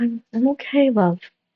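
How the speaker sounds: slow, soothing, comforting tone. Narrating a character reassuring her crying partner who tackled her, comforting. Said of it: "Astrid just rubs her back. She's like".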